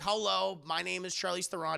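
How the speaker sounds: ordinary delivery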